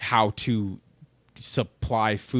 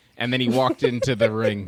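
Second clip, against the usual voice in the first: ordinary talk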